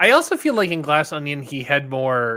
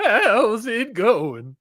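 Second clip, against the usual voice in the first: put-on old western old-timer voice, pitched up; 8 semitones higher than usual. Greeting someone in an old western man's voice from Gunsmoke. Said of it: "He's someone from Gunsmoke".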